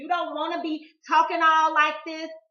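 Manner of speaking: very loud, hostile, aggressive tone. Advising listeners to watch their tone, showing what not to do: demonstrating an aggressive tone. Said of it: "That's aggression".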